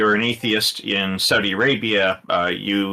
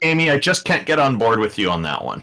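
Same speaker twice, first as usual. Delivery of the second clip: ordinary delivery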